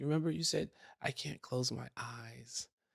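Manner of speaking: put-on half-asleep child voice. Retelling what a half-asleep daughter said at bedtime: imitating half-asleep Lily. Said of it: "she's just half asleep".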